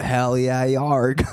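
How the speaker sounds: put-on stock pirate-speak voice. After talk of ocean creatures, in a pirate voice. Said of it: "is that your southern impression?".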